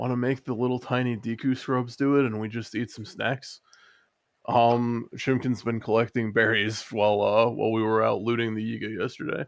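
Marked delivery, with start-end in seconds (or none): 0.0-3.6 hushed whisper. A player's character leans in to suggest a plan to companions, whispering. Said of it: "I lean in and kind of whisper".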